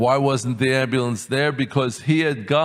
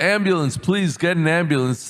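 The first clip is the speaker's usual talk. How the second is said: mock urgent, desperate pleading cry; 4 semitones higher than usual. Retelling pulling up to the gate at Ofra, shouting to the guard. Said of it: "I shout".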